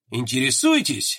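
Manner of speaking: low, snide, mocking tone. A general questions the colonel in the morgue, snide. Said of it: "ехидно спросил генерал".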